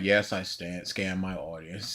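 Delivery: put-on, barely audible, joyless, flat, very quiet deadpan. Imitating how someone would read an admission, in the most unfun way. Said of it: "he would read it in the most unfun way".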